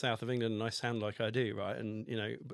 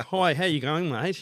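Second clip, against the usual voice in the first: put-on very loud, slow, booming, aggressively strong Australian accent; 5 semitones higher, 9 dB louder than usual. Retelling how he spoke at five: imitating his childhood strong Australian accent. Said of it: "a really aggressively strong Australian accent".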